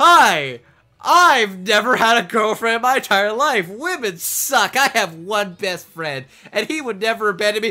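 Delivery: very loud, high, cocky swaggering nerd voice. Imitating the swirly glasses nerdy boy character: imitating a swaggering nerdy boy. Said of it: "walk with such swagger and confidence".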